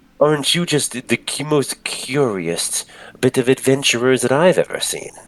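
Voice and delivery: high, beaming, friendly, big smiling voice. Voicing a man leaning on his cart, greeting the adventurers, with a big smiling voice. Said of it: "he's smiling real big at you guys".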